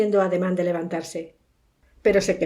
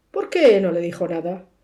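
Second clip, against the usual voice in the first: usual speaking voice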